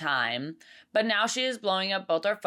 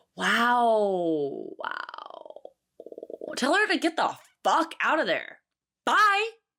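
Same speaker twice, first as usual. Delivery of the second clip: riled-up, worked-up rant, swooping pitch, stretched-out wow; 4 semitones higher than usual. Reacting to a guy's mom coming along on the first day: getting worked up. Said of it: "Sorry, I'm getting a little".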